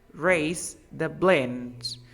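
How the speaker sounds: very slow, careful, drawn-out delivery.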